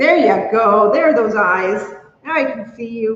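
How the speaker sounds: ordinary talk, nothing marked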